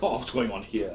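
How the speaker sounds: attempted soft English gentleman voice and accent. Describing a character idea, trying out an english gentleman voice. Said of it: "trying to do a like English gentleman".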